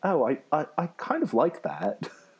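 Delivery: slow, drawn-out, put-on British accent. Retelling what a high school director would say: imitating a british director. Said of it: "a British guy".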